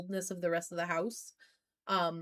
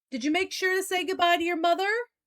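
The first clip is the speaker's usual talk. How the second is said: very high calling-out voice; 9 semitones higher, 4 dB louder than usual. Voicing the father calling behind the departing character: calling out. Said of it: "sounds like your father's kinda calling out".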